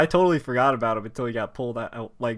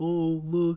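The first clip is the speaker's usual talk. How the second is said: put-on mocking villain voice, higher and quieter; 5 semitones higher, 4 dB quieter than usual. Retelling how the villain mocked the smile: imitating All For One mocking. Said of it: "he was even mocking".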